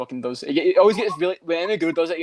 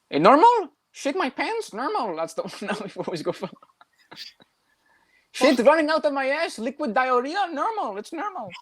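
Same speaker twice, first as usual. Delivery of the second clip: very high, slow, squeaky cartoon-mouse voice, Brazilian accent; 11 semitones higher than usual. Doing the Silva line everyone does: Anderson Silva impression. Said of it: "the one Silva line everyone always fucking does".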